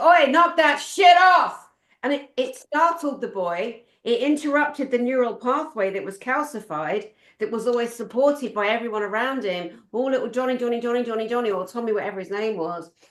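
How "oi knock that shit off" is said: high, loud, slow, angry bellow. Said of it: "his granddad yells at him and he goes".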